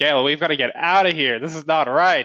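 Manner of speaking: urgent, loud shouted yelling. In a role-play game, a player voices their character yelling at a companion. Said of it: "so I'm I'm gonna yell like".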